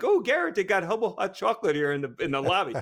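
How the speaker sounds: all worked-up, eager, excited, high, swooping voice. Retelling what Mike said when he came in: excited Mike impression. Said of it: "he was all excited, like".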